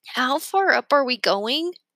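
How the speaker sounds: uneasy, nervous voice. Starting up a rope ladder, a character asks how far: asking nervously. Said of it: "Remy asked nervously".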